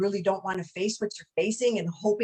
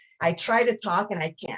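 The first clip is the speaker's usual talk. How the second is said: usual speaking voice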